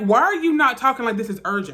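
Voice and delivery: ordinary talk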